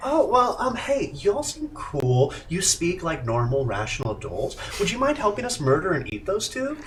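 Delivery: swooping monster giant-spider character voice. Voicing a spider addressing the group, spider voice. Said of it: "this is the spider voice now".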